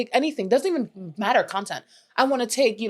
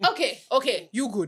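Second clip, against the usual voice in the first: put-on Haitian accent; 4 dB quieter than usual. Retelling a phone call from a father: imitating dad's Haitian accent. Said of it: "with his Haitian accent".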